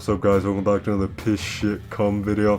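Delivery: quiet, flat, put-on monotone voice. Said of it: "He has a very monotone voice, yet he's like".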